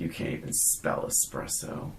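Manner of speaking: muttered, whispered jab in a near whisper. Retelling a film character's rude remark to a kind woman, muttering under his breath. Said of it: "just under his breath jerk".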